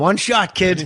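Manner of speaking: put-on Southie Boston accent. Voicing a stingray from Southie: Southie Boston accent. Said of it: "that stingray was from Southie".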